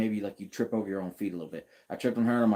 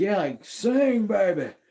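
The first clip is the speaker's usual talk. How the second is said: put-on very high, loud, rowdy drunken whoop; 11 semitones higher, 6 dB louder than usual. Retelling a movie shot played as a drunkard: acting as a loud drunkard. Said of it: "the loud, you know, drunkard".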